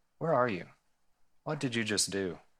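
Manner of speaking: soft, tender, heartbroken voice. Speaker retells God calling to Adam, retelling soft, brokenhearted words. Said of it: "He was coming to him brokenhearted".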